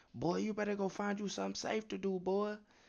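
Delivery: put-on high, angry, scolding grandparent-style yell. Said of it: "someone mad ass grandparent [name] yelling at the youngest grandkid".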